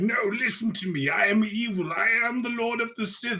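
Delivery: attempted evil voice, pitched a bit high. Imitating an actor straining to sound like an evil sith lord. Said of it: "Adam Driver trying to be like".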